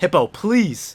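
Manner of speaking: desperate begging and pleading. Watching a Pokémon battle and urging Hippo to hit: begging and pleading. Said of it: "I'm begging and pleading".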